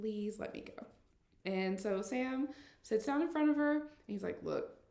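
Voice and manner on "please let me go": mock pleading tone, much quieter. Recapping a story, voicing Madison begging again: Madison begging, acted out. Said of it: "Madison just begs again".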